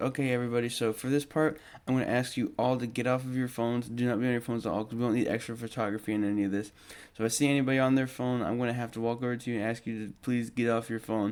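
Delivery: ordinary delivery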